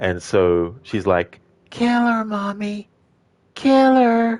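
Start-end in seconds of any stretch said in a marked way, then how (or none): 1.7-4.4 very high put-on little boy's voice. Describing a movie character who speaks in her son's voice: put-on child's voice. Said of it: "she sometimes speaks with the voice of her son".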